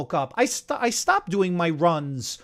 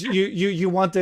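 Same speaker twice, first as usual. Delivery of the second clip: normal talking voice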